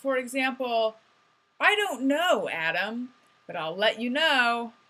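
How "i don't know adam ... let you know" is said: confident, self-assured, unbothered tone. Showing how they now answer when they don't know something, confident. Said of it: "I tried to sound more confident".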